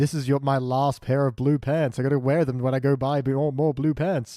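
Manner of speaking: ordinary talk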